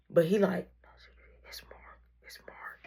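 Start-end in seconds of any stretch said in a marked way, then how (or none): 1.5-2.9 very low, muffled, barely-there whisper. Retelling how a man said only who he was, imitating someone talking very low. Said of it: "but he talking mad low".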